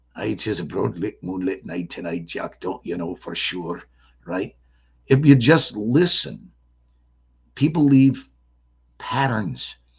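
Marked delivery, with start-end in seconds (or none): 0.2-3.8 low, soft, put-on Australian accent. Explaining that people leave speech patterns, showing how Australians sound: Australian accent. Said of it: "they sound like this".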